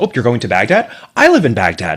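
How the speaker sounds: loud, high-pitched, officious woman's voice. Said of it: "this officious sort of a woman who said".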